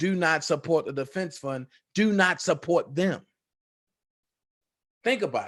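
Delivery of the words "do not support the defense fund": normal talking voice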